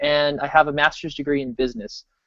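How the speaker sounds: ordinary delivery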